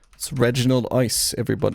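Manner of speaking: attempted British accent, slipping and drifting into Australian. Presenting the game character to the folks watching, in an attempted British accent. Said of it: "Every time I try to do a British accent".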